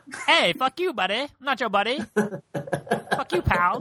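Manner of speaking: bad put-on Canadian accent. Friends talk about meeting up; the speaker answers with a South Park reference: half-assed South Park Canadian accent. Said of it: "What's up with the accent".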